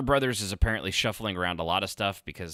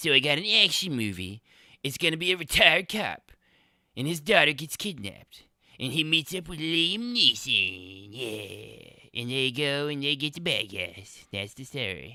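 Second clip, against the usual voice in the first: deliberately bad, high-pitched cartoon kid voice; 6 semitones higher than usual. Pitching an action movie plot, the speaker does a terrible Eric Cartman impersonation. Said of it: "it's a terrible Eric Cartman impersonation".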